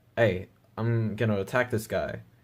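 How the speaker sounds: normal talking voice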